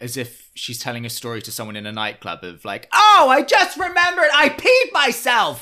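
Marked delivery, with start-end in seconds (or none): 2.9-5.6 piercing, bullhorn-like tone, very high and loud. Imitating Sonja as if she's telling a nightclub story: shrill, loud bullhorn voice. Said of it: "she has this quite shrill, loud, bullhorn tone".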